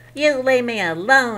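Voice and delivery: high, loud, squeaky, scared little goblin voice. Narrator reading the frightened little goblin's line, squeaking. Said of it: "he squeaked".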